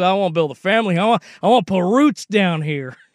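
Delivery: put-on fake Southern accent. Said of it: "did he say family with a fake Southern accent like Brian Kelly".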